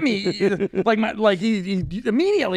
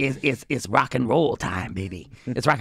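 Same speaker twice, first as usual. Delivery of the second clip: sinister put-on evil voice, much lower; 4 semitones lower than usual. Acting out a talking penis waking him at night, the speaker uses an evil voice. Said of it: "such an evil voice".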